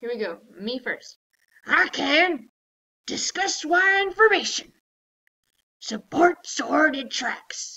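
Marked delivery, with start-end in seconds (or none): 1.6-7.8 loud, slow pirate voice. Leading a lesson and asking listeners to join in, going first: pirate voice. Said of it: "I'm going to talk like a pirate".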